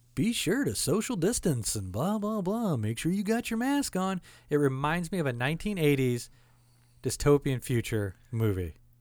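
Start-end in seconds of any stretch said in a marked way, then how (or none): 0.2-4.2 overly nice, sugary announcer voice, pitched up. Imitating a man who interrupts the music over the intercom, imitating a very nice voice. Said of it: "in his nicest voice".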